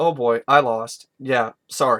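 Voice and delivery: play-acted, utterly deadpan throwaway line, no reaction. Retelling a favorite movie scene, playing Fletch's line, imitating Fletch's deadpan. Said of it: "this is one of the best scenes that showcases deadpan".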